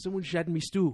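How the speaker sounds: loud, high put-on Scottish accent, me for my. Speakers talking about warming up with accents, doing a scottish accent. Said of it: "you warm up with a Scottish accent".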